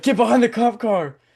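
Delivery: shrill, very high-pitched, loud screaming. Retelling how the officer screamed at them on the highway: imitating a screaming officer. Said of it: "starts screaming".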